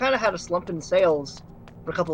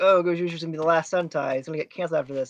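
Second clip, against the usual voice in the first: usual speaking voice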